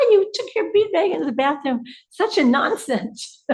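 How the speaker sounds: put-on high scream. Recalling someone yelling at them on leaving the bathroom, imitating someone screaming. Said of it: "someone started screaming at me".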